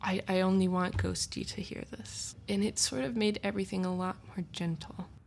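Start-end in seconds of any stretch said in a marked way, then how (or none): none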